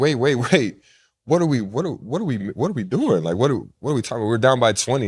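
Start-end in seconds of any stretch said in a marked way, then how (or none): none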